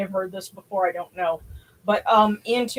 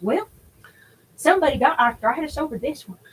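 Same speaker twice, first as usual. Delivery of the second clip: put-on funky country accent; 6 semitones higher than usual. Quoting a younger brother at a museum exhibit; funky redneck accent. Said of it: "He's got this funky redneck accent".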